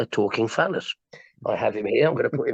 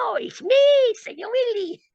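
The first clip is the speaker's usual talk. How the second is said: very high, squeaky little puppet voice; 3 dB louder than usual. Recounting the bit with his puppet, in the Senor Willie puppet voice. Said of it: "And he's a Mexican".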